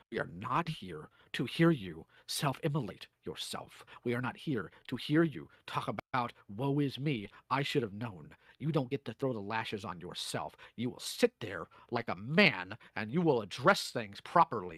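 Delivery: very low, deep, frightening tone. Speaker addresses a listener directly in a deep, scary voice. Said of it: "I got the deep, scary voice".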